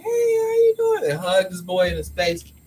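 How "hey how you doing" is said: very high, bright, put-on fake-friendly tone. Retelling greeting a man's friend while he stands right there, with a put-on big smile. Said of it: "I smiled, the biggest smile".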